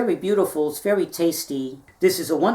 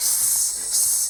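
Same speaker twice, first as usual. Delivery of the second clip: whispered, breathy snake hiss drawn out on sss. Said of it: "Don't hiss at me".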